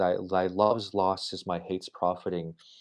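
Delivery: ordinary delivery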